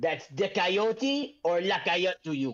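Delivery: put-on French accent. Narrating a scene, voicing a character who stops walking, in a French accent. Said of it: "I'm gonna do the French accent all the time now".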